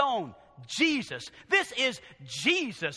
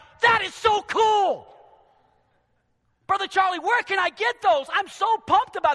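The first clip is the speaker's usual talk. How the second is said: high, loud, fired-up, gushing excited shouting. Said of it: "a church that's on fire is like".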